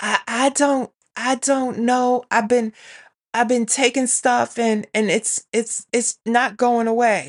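hoarse, scratchy, raspy voice with halting, stumbling words. Retelling how a sleepy child answered: imitating a hoarse, raspy voice. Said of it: "talking to me in this hoarse, raspy voice".

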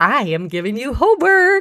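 high, bright-eyed excitement with wide pitch range.

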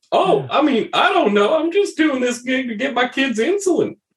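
very high, friendly, chummy, tipsy voice. In a roleplay, Chunky answers the group's questions: friendly drunk Chunky voice. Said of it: "Chunky is probably the most friendly of the bunch. It seems like Chunky's a fun drunk".

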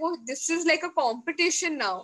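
normal talking voice

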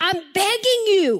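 high, pleading, begging tone. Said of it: "Can you hear this in his voice?".

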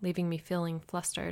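plain

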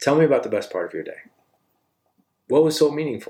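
genuinely curious tone. Showing how to ask someone about their day, in a curious tone. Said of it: "you do it in that voice tone, which that voice tone is curiosity".

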